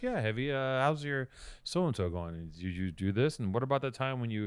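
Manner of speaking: laid-back, mellow, easygoing tone. Imitating the other speaker asking Heavy questions: imitating a mellow tone. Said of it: "your tone is so mellow and you're like".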